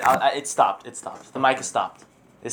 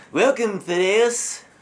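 terrible, very bad fake French accent; 4 semitones higher than usual. Speaker greets Thaddeus in the worst French accent. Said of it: "That is the worst French accent I've ever heard".

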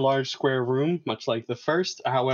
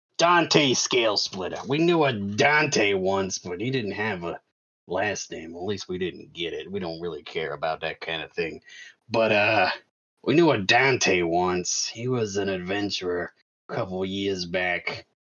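very deep, low, smoky smoker's voice; 7 semitones lower than usual. Game master, as a guild clerk, answers a question about someone named Dante, low smoker's voice. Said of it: "We're just gonna go really low and they're gonna sound like smokers".

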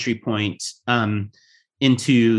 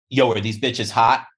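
crude, cocky frat-bro voice. Asked how to identify a douchebag, demonstrating a douchebag voice. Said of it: "well you sounded just like a douchebag".

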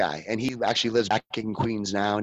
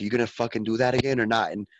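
mock threatening tone. Retelling how Jesse got held down on tables and threatened, imitating a threat. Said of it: "and like threatened".

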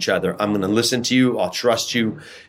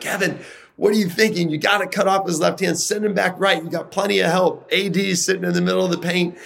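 mock hollering, shrill and very high; 9 semitones higher than usual. Retelling yelling at a teammate during an All-Star game: retelling own shouting. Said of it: "And I'm yelling at Kevin".

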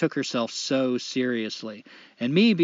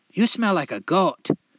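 put-on Scottish brogue, pitched up; 5 semitones higher, 4 dB louder than usual. Retelling what a woman once said to the speaker, in a Scottish accent. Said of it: "She started sounding Scottish".

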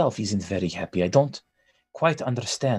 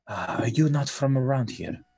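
lightly hushed, soft tone; 3 semitones higher than usual. Game master voicing a woman who starts to speak to the party, hushed tone. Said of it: "She starts to speak in a hushed tone".

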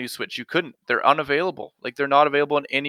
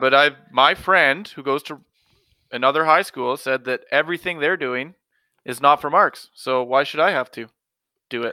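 ordinary talk

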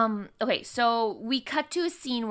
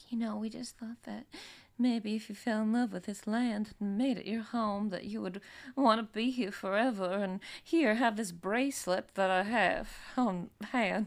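coaxing, guilt-laden, guilt-tripping pleading tone; 5 dB quieter than usual. Recapping a show, the speaker acts out Malia guilting Sydney: Malia impression. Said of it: "That's a great impression of her".

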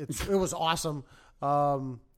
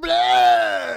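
shrieking terrified scream, very high and very loud; 12 semitones higher, 12 dB louder than usual. Retelling screaming at the TV during a game: imitating his own scared scream. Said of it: "except the more scared version".

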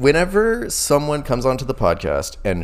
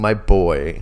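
ordinary talk

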